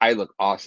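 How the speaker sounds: normal talking voice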